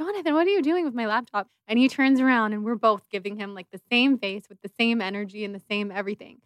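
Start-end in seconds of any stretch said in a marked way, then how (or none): 0.0-1.5 play-acted, high-pitched, called-out shout. Retelling the other speaker calling out about the laptop: retelling the other speaker shouting. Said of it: "And then you're shouting out to Jonathan".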